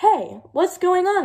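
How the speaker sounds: muffled cry, as if from underneath. A voice trapped under a snowball calls to those above; muffled cry. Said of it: "it cried".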